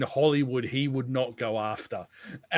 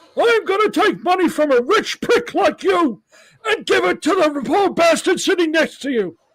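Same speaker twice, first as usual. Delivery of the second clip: very loud, high-pitched yelling, belted out; 9 dB louder than usual. Quoting a comedian's impression of a campaigning politician: Dana Carvey's Bernie Sanders impression. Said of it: "Dana Carvey's impre-, impersonation of Bernie Sanders".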